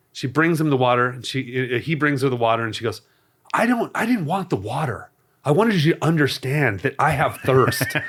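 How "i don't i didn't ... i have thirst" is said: put-on Puerto Rican accent in English. Retelling a couple's argument, quoting the woman in her Puerto Rican accent. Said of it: "in her Puerto Rican accent".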